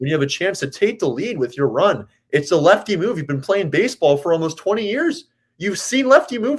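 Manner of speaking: worked up. Venting about professional players' mistakes on the bases: worked up. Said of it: "I'm sorry, I'm getting worked up".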